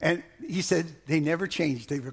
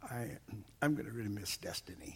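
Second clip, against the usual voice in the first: mock hushed, very quiet voice that cracks and breaks up; 6 semitones lower, 13 dB quieter than usual. Retelling the pastor's words about leaving: imitating Pastor Peter's voice cracking. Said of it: "I heard his voice kinda crack".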